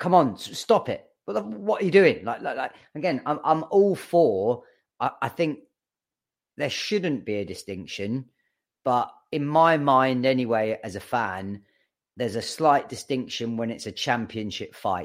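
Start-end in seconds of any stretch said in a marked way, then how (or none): 0.0-2.2 mock shouting, much higher pitch. A fan reenacting what they yelled at the ref, retelling shouting at the ref. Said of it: "I'm shouting at the ref".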